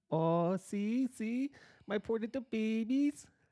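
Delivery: very high, squeaky, fake put-on Spanish accent. Speaker mimics a woman from a southern state acting spanish, put-on spanish accent. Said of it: "she's like has a Spanish accent".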